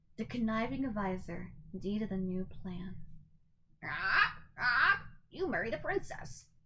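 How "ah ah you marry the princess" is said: squawking cartoon parrot voice. Narrator telling the story of Jafar, voicing his parrot: squawking Iago parrot voice. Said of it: "squawked his wicked parrot Iago".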